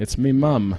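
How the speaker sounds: put-on mixed Australian and British accent. Giving in to calls for a British accent: Aussie British mix accent. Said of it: "I do a Aussie British mix".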